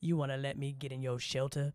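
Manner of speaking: very low, sexy put-on voice. Joking about how [name] gets into shelters at night: put-on sexy [name] voice. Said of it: "with my sexy [name] voice".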